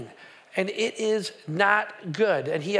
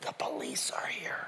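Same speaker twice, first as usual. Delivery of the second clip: put-on very quiet whispered kid voice. Retelling a child answering the phone: imitating a whisper. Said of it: "the kid's whispering all the way through".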